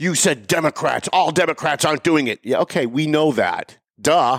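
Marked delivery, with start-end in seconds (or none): 0.0-2.4 put-on huffy, indignant tone. Retelling what a man said when he got huffy: imitating a huffy tone. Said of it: "He got all huffy".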